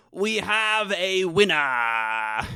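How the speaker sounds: booming amplified announcer voice, very slow, winner stretched. Narrating the scene, the drow announces to the crowd in an amplified voice. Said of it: "says in an amplified voice".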